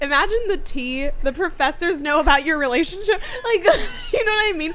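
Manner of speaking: excited, giddy, high, loud laughing squeal.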